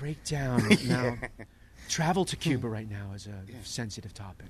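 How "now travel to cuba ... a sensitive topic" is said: very soft, low, hushed radio presenter voice. Describing how he does interviews, showing his NPR voice. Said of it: "I go into my NPR sort of voice".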